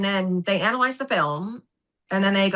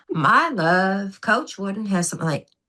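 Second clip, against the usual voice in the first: put-on Southern US accent. Wife retelling her husband's reply about Coach Wooden, in a Southern accent. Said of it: "I have to do the Southern accent".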